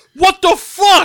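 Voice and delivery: furious what the fuck, high, slow, loud outraged yell.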